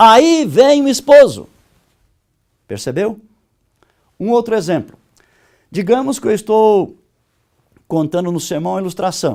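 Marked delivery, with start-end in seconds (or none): 0.0-1.5 very loud, high-pitched, drawn-out proclaiming shout. Reading a sermon illustration whose content calls for a shout, shouted loudly. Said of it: "o conteúdo exige um grito. Então o correto seria assim".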